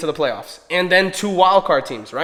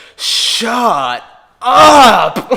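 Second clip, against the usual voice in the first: revolted, disgusted shout, raised and stretched up high; 5 semitones higher, 6 dB louder than usual. Retelling what a woman shouted at the top of her lungs, imitating a disgusted shout. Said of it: "with disgust and just horrible".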